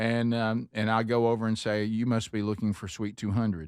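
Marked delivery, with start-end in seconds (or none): 1.8-3.7 gentle, calm, soothing voice. Retelling how they guide lost visitors to the suite: imitating own calming voice. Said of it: "walk over with a calming voice".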